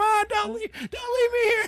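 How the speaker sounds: shrill, very high screaming cry. Retelling running out the front door after mom, imitating own past screaming. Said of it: "ran screaming out the front door".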